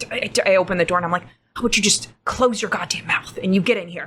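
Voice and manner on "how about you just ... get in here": hushed, quiet, under the breath. Opening the door to Celia, who wants to come in, spoken quietly. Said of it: "I said it quietly".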